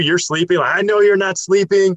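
angry, accusing loud yell. Recounting being woken and scolded, retelling a yell. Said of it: "And then he's yelling at you".

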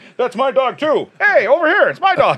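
very high, projected thrown voice. Retelling one's own earlier words, imitating throwing one's voice. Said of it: "I'm throwing my voice".

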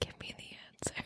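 whispered very quietly, barely under the breath. Retelling what the other speaker just said: imitating someone whispering. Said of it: "whispering to me".

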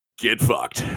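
great announcer voice, like a radio host. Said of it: "You do have that great announcer voice".

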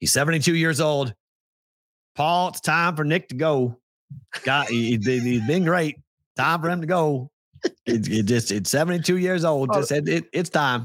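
put-on Alabama accent. Imitate a caller phoning Paul after Alabama loses, in a put-on Alabama accent. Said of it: "It's not a bad Alabama accent".

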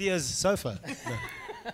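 giggling laughter with a high, squeaky "no".

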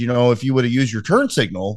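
plain

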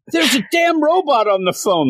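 shrill, very high outburst of a holler. Retelling a prank call where the man who answered yelled: imitating a man yelling. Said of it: "And the guy actually yelled".

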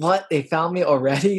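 genuinely surprised, startled outburst. Recounting a game character found by her pursuers, acting out Reese's surprise. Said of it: "Like she's genuinely surprised".

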